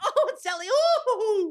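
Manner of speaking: very high-pitched voice, giggling through. Showing a co-host how Sally from Love Island sounds, do a giggly Sally impression. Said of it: "She giggles".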